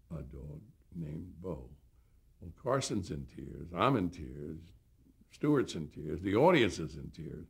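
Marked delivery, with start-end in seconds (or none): 0.1-1.7 halting, hesitant, very hushed, soft and slow. Recalling how a man ended the poem he read, imitating a hesitant voice. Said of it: "and that hesitant voice".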